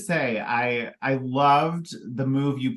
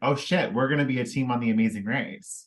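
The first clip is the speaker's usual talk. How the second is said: ordinary talk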